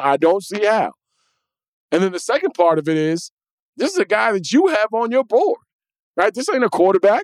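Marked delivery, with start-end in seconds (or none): 0.0-0.9 "I don't see how" with how dropped in firm fall. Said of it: "Don't get me wrong".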